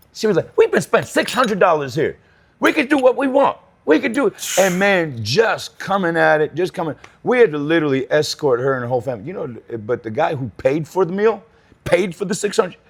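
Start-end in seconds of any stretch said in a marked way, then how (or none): 0.5-4.3 very high, swooping, belligerent shouting. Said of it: "Started yelling".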